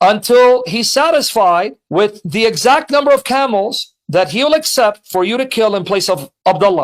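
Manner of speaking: plain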